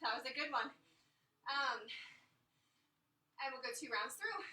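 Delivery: winded, catching breath. Leading a workout between exercises, still catching breath. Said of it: "Still trying to catch my breath".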